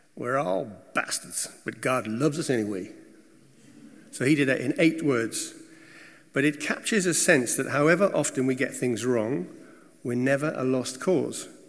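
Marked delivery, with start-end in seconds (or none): 0.2-3.0 light put-on American Southern twang. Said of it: "I'm going to add a slightly American southern twang here".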